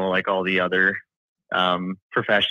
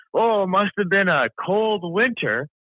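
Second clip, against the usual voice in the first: put-on thick Czech accent, high pitch, slow pace; 11 semitones higher than usual. Retelling what a wife's hardcore Czechoslovakian relative said: imitating a thick Czechoslovakian accent. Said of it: "thick accent and everything".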